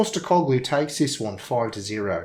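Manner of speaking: a touch of put-on New Zealand accent. Switching into their New Zealand accent for one line: New Zealand accent. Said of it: "I can just take it my New Zealand accent and do it a little bit".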